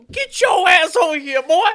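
high, shrill, loud put-on mother voice yelling. Picturing their mamas yelling at him: imitating a mama yelling. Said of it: "Just imagine their mamas yelling at him".

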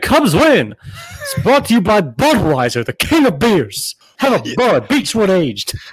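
put-on swooping old-time radio announcer voice. Testing a new fancy microphone, feeling like Harry Caray: Harry Caray voice. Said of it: "I feel like Harry Carey".

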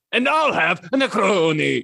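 put-on slow Italian accent. Acting out the character ordering a drink at a cocktail bar: Vegeta with an Italian accent. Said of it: "He does it with the accent".

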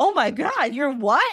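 put-on gasping shock. Retelling a story where a crowd gasps at a man: imitating a shocked gasp. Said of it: "And everyone gasped".

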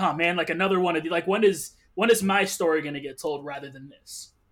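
ordinary talk, nothing marked

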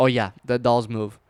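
normal talking voice

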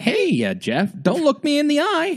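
very high, swooping sing-song voice. Doing an Ellen impression after the other speaker praises it. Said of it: "that's a good Ellen impression".

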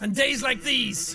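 put-on grungy New York style accent. Voicing Sans's lines in the Sans fight, grungy New York voice. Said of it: "grungy kind of New York voice".

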